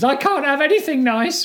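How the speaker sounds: very high, despairing, desperate wail. Retelling what a mum said after a pet died: imitating desperate screaming. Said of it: "in her desperate screams".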